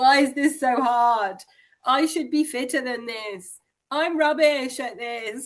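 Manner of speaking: high, hammed-up, acted, overdramatic amateur-dramatics delivery. Describing the voice in your head during exercise, acting out an overdramatic inner voice. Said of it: "Sorry for my amateur dramatics".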